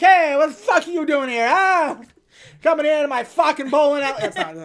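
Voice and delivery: exaggerated New York accent. Describing two characters and acting one out, in a new york stereotype accent. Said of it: "two very, like, New York stereotypes".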